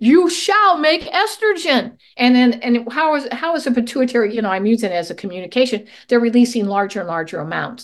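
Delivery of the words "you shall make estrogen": acted very high, slow, forceful commanding voice. Speaker acts out the pituitary repeating its order, in a put-on stronger voice. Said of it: "let me say it in a stronger voice".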